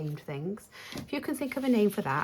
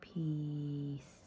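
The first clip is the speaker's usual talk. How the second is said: stretched, slow, deliberate drawn-out single word; 3 semitones lower, 8 dB quieter than usual. Announcing the name of the one just found: said slowly. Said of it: "I don't know why I had to say it that slow".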